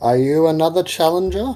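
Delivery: put-on pompous, haughty voice. Narrating a scene, voicing the main guy: pompous put-on voice. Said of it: "With a very pompous voice".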